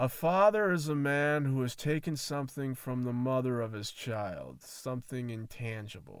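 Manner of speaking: ordinary delivery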